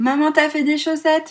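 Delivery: over-high, squeaky, shrill put-on little voice. Retelling showing someone the socks she made, the speaker uses a very high-pitched put-on voice. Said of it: "Avec une voix comme ça, un petit peu suraiguë".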